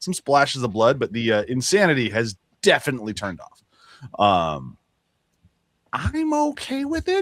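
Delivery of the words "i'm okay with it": very high-pitched, deliberate, drawn-out voice. Admitting being okay with the change: very high-pitched voice. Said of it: "I say in a very high pitched voice".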